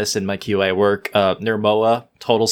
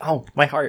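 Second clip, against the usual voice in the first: ordinary delivery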